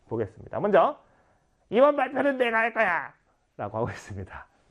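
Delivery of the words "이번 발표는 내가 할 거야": high-pitched, insistent student character voice. A teacher voices one of several students in a scene, in a character voice. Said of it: "여러 가지 목소리를 연출했죠".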